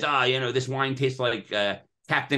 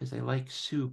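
quiet, soft, small, shy little voice; 8 dB quieter than usual. Retell how a very shy, socially anxious man would answer the press, in a quiet little voice. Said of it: "he would say in this quiet little voice".

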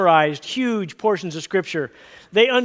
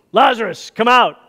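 loud, firm, no-nonsense fatherly dad voice; 3 semitones higher, 6 dB louder than usual. Retelling the tomb story, the speaker gives the call in a dad voice. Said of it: "he uses his dad voice".

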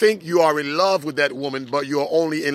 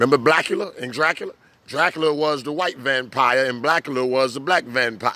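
ordinary talk

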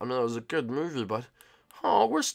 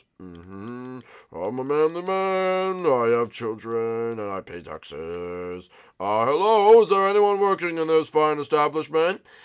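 disguised manly voice. Boy in disguise trying to buy a lottery ticket, in a put-on manly voice. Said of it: "I have to put on my manly voice".

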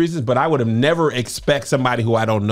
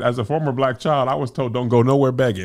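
ordinary talk, nothing marked

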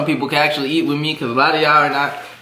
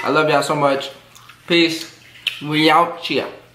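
speaking mid-chew, mouth full. YouTuber signing off a video, talking with mouth full. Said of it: "I'm still chewing".

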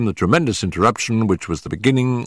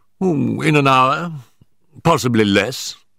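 usual speaking voice

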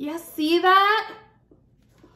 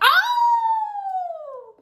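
very high, owl-like hoot. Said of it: "Why do I sound like an owl".

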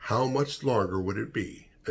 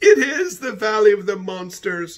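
shrieked out; 11 semitones higher, 9 dB louder than usual. A member of a group shrieks after a voice rings out ahead of them. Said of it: "shrieked Charles".

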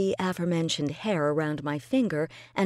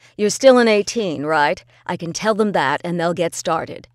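brisk, rapid-fire, sharp, quick, raised voice; 8 dB louder than usual. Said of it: "He sighed noisily in my ear, / I'm still in London, but I'm working for an independent channel now. / This was said in his usual sharp, quick manner. / Narrated by [name]".

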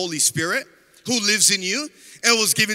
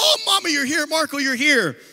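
play-acted, high, yelled-out screaming cry; 6 semitones higher than usual. Retelling coming home to find family there, imitating his own past screaming. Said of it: "I was screaming".

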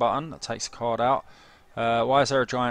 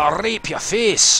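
loud, high-pitched put-on Scottish accent; 8 semitones higher, 7 dB louder than usual. Quoting someone's words to your listeners, Scottish accent. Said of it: "sorry about the Scottish accent".

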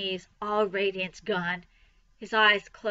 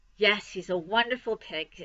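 ordinary delivery

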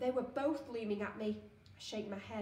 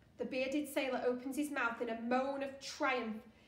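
plain

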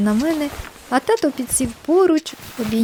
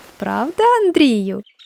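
sly, slyly spoken tone. Narrator reads the mother turning to the father with a question, sly. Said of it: "звернулась вона до тата і хитро так підморгнула".

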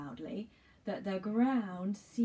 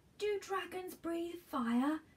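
panting, gasping for air, much higher; 10 semitones higher than usual. George, hurrying to catch up with his grandfather up a path, asks while panting. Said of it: "Panted George".

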